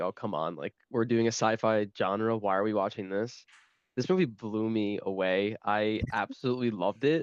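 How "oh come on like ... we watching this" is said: usual speaking voice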